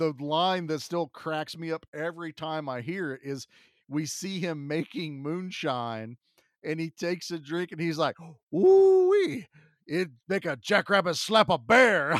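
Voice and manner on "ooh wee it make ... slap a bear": put-on very thick, odd Cajun accent, very loud and swooping. Retelling a movie scene of a character drinking moonshine: Wilford Brimley's Cajun accent. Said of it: "thickest, weirdest Cajun accent".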